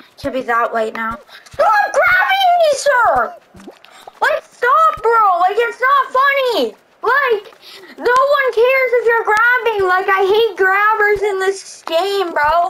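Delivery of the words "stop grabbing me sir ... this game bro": fed-up, stressed-out, annoyed griping, pitched up. A gamer complains about other players grabbing them in the game: stressed and annoyed. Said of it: "it's making me stress".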